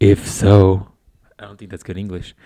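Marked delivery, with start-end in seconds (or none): 0.0-0.9 very slow, lingering, creepy drawl. Reading aloud a message someone sent, in a creepy voice. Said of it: "let me get my creepy voice on".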